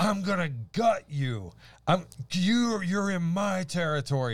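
put-on, high, slow, drawn-out, flipped-out unhinged voice. Retelling a woman in a shop threatening the speaker: imitating a woman flipping out. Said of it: "flipped out".

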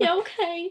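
mock tearful, crying, high, teary little voice. Retelling a scene from the show, imitating crying. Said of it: "crying, being like".

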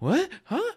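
very high, truly confused, bewildered gasp. Imitating the studio audience's reaction: imitating confused audience gasp. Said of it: "a legitimate confusion in their voice".

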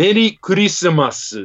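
Japanese pronunciation of English words. Giving the Japanese pronunciation of a holiday greeting, Japanese accent. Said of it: "Let me put the Japanese pronunciation".

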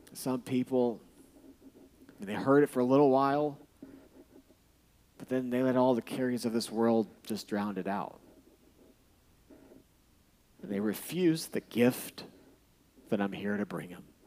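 wistful, sorrowful longing with frustration. Imagining Jesus telling the parable: Jesus speaking with wistful longing. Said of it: "He said it with wistful longing of frustrated love".

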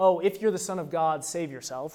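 usual speaking voice

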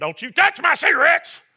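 high-pitched yelling. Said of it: "dangerous man's walking out in handcuffs looking at his wife saying".

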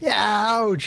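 put-on screaming in teen voice. A game narrator voices a character hit by an attack, screaming in a teenage voice. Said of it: "she screams out in her teenage voice".

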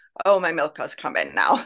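ordinary talk

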